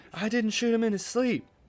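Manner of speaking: screamed, very high and very loud, shrill. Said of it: "He screams".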